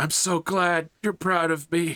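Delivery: tearful, high crying voice, words very slow. Voicing a young man still crying as he struggles to his feet: crying while speaking. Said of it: "He's still crying".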